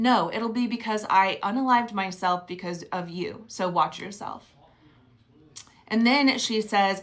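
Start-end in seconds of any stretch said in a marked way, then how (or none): none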